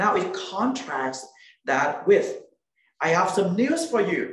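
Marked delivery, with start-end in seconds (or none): 3.0-4.3 eager, excited, fast, pitched-up, energetic delivery. Contrasting how good news is announced with bad news: excited, energetic voice. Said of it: "excited, eyes shining, and energy in my voice".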